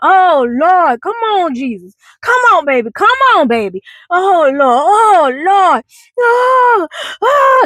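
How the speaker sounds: very slow, high, drawn-out, tearful crying plea. Retelling a commotion heard outside Sunday school class: imitating someone crying and praying. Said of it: "like, crying".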